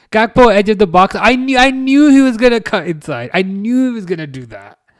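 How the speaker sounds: slipping into a Welsh accent. Reacting to Gakpo cutting inside during a match: Welsh accent. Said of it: "I don't know why I'm sounding Welsh".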